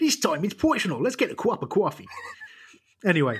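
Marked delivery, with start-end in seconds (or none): 0.0-2.1 put-on weird, half New York accent, pitched up. Repeating a football intro line someone else read, in a weird almost New York accent. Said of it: "weird sort of almost New York accent".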